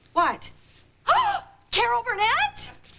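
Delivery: gasping astonishment, very high-pitched. In a tv scene, a character hears that a caller has won: gasping.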